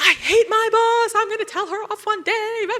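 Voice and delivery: tantrum-throwing voice. Speaking as the body's immature inner voice, in a temper tantrum voice. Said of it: "the body throwing a temper tantrum".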